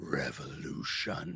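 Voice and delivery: weird reverberating airy tone. Narrating a character who grips his fist tighter and says the word: weird airy reverberating voice. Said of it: "weird, airy, almost reverberating sound".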